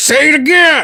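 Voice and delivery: mock, very high, loud voice. Retelling a rude woman answering a shush at a table: imitating someone getting louder. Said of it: "She got louder".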